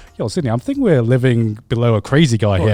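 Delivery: ordinary delivery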